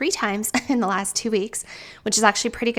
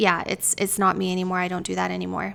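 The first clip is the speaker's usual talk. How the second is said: mock sad, hopeless, flat monotone. Retelling an earlier conversation, the speaker imitates their own mock monotone, hopeless tone. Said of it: "I said it with a very like monotone, sad, very, very sad, hopeless feeling".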